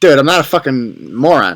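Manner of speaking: blunt, straight-up trash-talking manner. Imitating young conservatives talking back to a committee member: imitating blunt trash talk. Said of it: "just talking shit to him".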